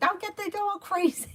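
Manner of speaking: high, mock yelling mom voice. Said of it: "is yelling".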